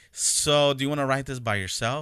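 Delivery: normal talking voice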